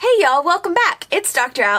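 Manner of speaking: very Texan sounding voice. Psychologist greeting viewers at the start of her video, sounding very Texan. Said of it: "I sounded very Texan".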